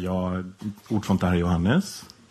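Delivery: nice, pleasant, polite telephone voice. Retelling answering the phone at work: imitating own nice telephone voice. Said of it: "Jag har väldigt trevlig telefonröst".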